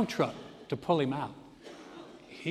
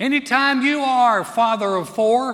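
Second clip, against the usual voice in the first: high, loud irritated yelling. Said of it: "she yells out".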